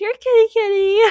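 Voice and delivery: mock half-hearted calling tone. Retelling how a woman called for the missing cat, imitating a half-hearted call. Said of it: "But very, like, half-heartedly".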